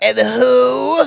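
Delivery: put-on very high, rasping, creaky old-woman voice. Describing the landlord who was called, the speaker is imitating a 70-year-old woman.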